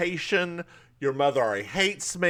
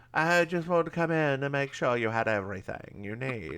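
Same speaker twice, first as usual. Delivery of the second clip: faintly British put-on accent; 4 dB quieter than usual. Retelling a story, voicing Bill's mom at the door in a slightly British voice. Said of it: "I don't know why I'm giving her this voice".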